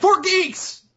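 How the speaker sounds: shouting. Showing the others how the code has to be said, yelling. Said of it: "You have to yell".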